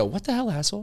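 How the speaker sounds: very high-pitched character voice. Recalling a $20 sketch where he played Catelyn: Catelyn voice. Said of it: "I was doing this voice".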